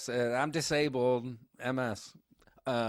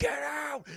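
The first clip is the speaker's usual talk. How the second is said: very high, frenzied, berserk yell. Retelling a movie scene where a character charges: imitating a berserk yell. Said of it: "goes full berserk".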